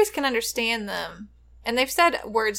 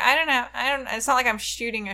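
plain

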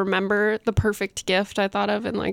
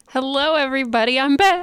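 loud, bursting, excited voice; 4 semitones higher, 3 dB louder than usual. Co-host back on the podcast greets everybody, loud and excited. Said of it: "I got loud because I got excited".

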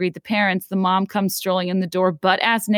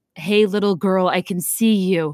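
put-on deep male voice. Retelling a babysitting phone call, imitating a deep-voiced man on the line. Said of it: "the man with the deep voice says".

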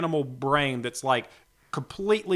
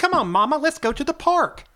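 put-on little boy voice, higher and louder; 12 semitones higher, 6 dB louder than usual. Showing an unwanted dog voice that sounds like a little boy: dog talking like a little boy. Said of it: "a dog that's like a little boy".

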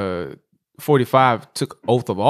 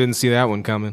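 ordinary delivery

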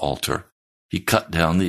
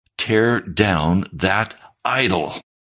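play-acted fierce, wild, savage commanding tone; 3 semitones higher than usual. Retelling the words heard during meditation: imitating a savage voice. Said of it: "He spoke in a savage voice".

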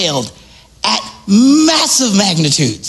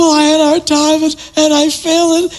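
mock crying in a higher-pitched voice; 9 semitones higher than usual. Retelling what a crying contestant on Shark Tank said: imitating someone crying.

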